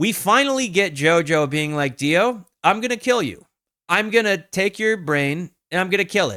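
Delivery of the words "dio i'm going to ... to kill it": put-on vengeful, threatening tone. Retelling a death threat and vengeance promise: imitating JoJo's death threat. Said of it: "death threat, and vengeance promise".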